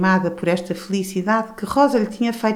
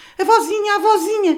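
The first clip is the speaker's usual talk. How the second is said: scared, very high, frightened shouting cry; 13 semitones higher, 3 dB louder than usual. Rosa calls to her blind grandmother, who has collapsed: frightened shout. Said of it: "Gritava Rosa assustada".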